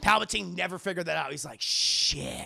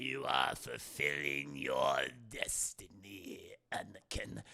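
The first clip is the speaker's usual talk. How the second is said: very low, deep, slow, echoing, dragged-out drawl; 10 dB quieter than usual. Describing a scene, speaker quotes Palpatine addressing Anakin, in an echoing Palpatine voice. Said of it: "Palpatine's voice changes here. Now he's, uh, he's talking like this".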